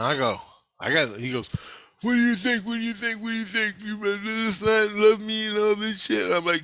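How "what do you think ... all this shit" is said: put-on high-pitched yelling, repeated over and over. Retelling an argument with an ex, imitating someone yelling. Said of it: "he's yelling at me".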